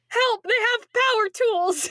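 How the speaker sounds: high, panicked mock yell through laughter.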